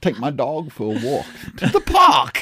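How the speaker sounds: put-on voice, very loud and swooping. Showing another speaker the Christopher Walken impression being practiced: Christopher Walken impression. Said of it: "I was practicing my Christopher Walken".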